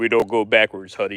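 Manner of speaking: deepest, lowest put-on voice he can manage. Retelling what the guy making sandwiches told a lady, retelling in his deepest voice. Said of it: "the guy says in his deepest voice".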